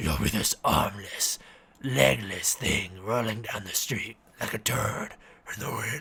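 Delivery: deep, low, throaty voice from deep in the throat. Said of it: "what other Venom voice?".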